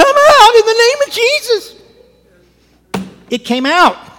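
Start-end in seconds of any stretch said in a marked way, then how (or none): 0.0-1.7 put-on very high, loud, girly, desperate cry. Retelling facing a manifestation, the speaker repeats their own command, in a girly, desperate voice. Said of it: "in the most girly voice you ever heard, in desperate voice".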